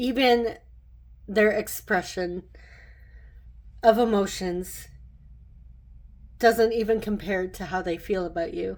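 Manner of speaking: voice catching on tears, halting and choked. Giving a tarot reading to the listener, tearing up. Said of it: "I'm like actually tearing up".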